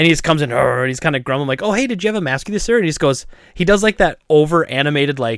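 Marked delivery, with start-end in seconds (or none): 1.6-2.8 mock-courteous, very polite, nicely put, pitched up. Speaker retelling asking a man who came in about a mask, acting out asking nicely. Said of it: "And I say it very nicely".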